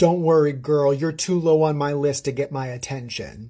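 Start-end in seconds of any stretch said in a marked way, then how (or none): none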